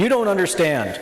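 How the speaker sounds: high, mild, put-on called-out yell. Retelling a tax assessor interrupting a presentation: imitating the assessor yelling. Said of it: "she just yells out".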